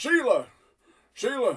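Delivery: worried man's call. Narrating a scene, voicing a man calling through the mist, concerned man calling out. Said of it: "a concerned man's voice".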